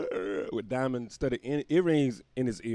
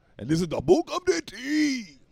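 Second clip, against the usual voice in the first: very high-pitched, slow, drawn-out samurai warrior voice; 13 semitones higher, 4 dB louder than usual. The host introduces the show, the book of d.t., like a samurai warrior. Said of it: "I don't know why I said it like a samurai warrior".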